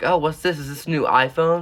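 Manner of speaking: high, loud, mocking teacher voice.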